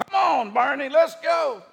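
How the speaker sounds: loud, high-pitched shouting.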